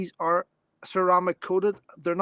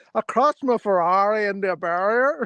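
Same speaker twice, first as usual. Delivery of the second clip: mock, deliberately fake Northern Irish accent; 2 semitones higher, 4 dB louder than usual. Retelling what a dutch man says about crashing his ferrari, imitating a fake northern irish accent. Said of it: "It's like a fake accent".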